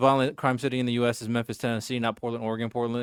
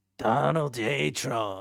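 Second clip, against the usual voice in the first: put-on voice with a pushed rasp; 3 dB quieter than usual. Still working on an impression, the speaker tries out a deep, raspy put-on voice. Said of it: "but still raspy".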